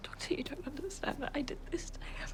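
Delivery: quiet weeping. Answering the doctor after the bad news about him, sobbing softly. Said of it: "[sobbing softly]".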